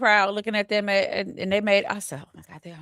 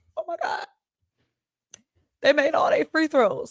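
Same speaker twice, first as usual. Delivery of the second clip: play-acted, pitched-up, overwhelmed, proud, emotional gush; 8 semitones higher than usual. Retelling watching the team make every free throw: retelling own emotional reaction. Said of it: "I was emotional".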